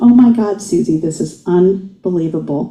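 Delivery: ordinary delivery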